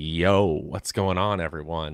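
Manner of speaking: sultry, smooth, low radio-host voice. Showing how he sounds once he hits record, smooth radio host voice. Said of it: "sultry radio voice ... Just a little bit smoother, a little bit nicer".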